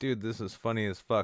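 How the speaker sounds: plain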